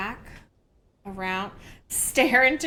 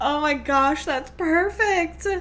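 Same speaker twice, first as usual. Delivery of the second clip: talking through laughter, louder; 3 semitones higher, 5 dB louder than usual. Reacting to a clip made by viewers, laughing while talking. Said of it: "I'm laughing so hard, I'm teared up".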